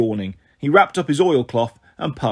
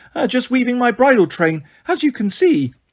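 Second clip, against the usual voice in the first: very high, put-on falsetto voice; 10 semitones higher than usual. Narrator reading Grover's line to the Cyclops, in a falsetto voice. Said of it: "Grover said in his falsetto voice".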